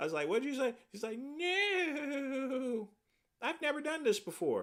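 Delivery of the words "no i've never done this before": tiny, small, high, slow voice. Retelling what a man said when asked to repeat himself: little voice. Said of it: "he said in a little voice".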